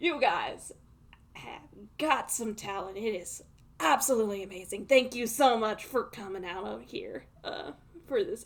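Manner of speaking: slow, cowboy-style Southern drawl. Voicing the character Spider Brew thanking the contestants: Southern accent. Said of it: "I don't know why he went Southern".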